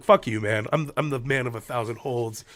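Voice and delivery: ordinary talk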